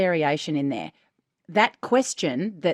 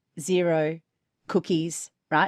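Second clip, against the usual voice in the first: flat, emotionless monotone, read without feeling. Demonstrating saying the words with no judgment behind them, flat with no emotion. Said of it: "There's no emotion in that".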